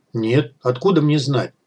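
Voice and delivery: ordinary delivery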